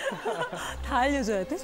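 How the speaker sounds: high, exaggerated, mock-exasperated whine.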